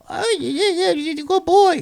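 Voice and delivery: put-on very high, cooing baby talk. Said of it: "me talking baby talk to them".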